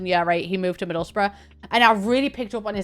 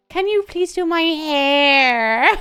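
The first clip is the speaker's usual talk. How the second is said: slow, high Irish twang, "hair" drawn out; 7 semitones higher, 4 dB louder than usual. Describing how a niece talks: imitating Eve's Irish twang. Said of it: "my niece Eve has got a proper twang".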